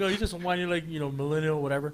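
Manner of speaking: ordinary talk, nothing marked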